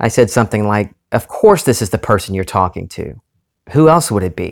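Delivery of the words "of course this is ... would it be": mock curt, short, impatient, exasperated tone. Retelling own answer to an unknown caller: imitating a short impatient reply. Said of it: "but a short, impatient way".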